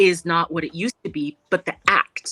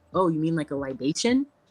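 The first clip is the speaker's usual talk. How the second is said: ordinary delivery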